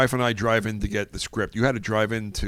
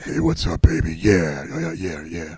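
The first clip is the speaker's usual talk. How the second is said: put-on low, loud, smoky voice; 4 semitones lower, 5 dB louder than usual. Retell how a fellow actor's voice changed when action was called, imitating a smoky voice. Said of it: "like this smoky voice".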